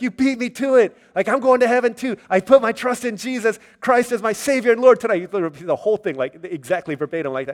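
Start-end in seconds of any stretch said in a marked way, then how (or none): 0.0-5.2 overjoyed, eager, excited burst, high raised voice. Retelling a friend's words after the worship service, imitating Chris's excited voice. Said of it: "so excited".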